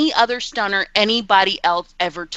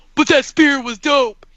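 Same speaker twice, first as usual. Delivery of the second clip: mock voice, higher pitch; 5 semitones higher than usual. Mocking how a Twitter troll talks: imitating a Twitter troll. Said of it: "tried to go and be a Twitter troll".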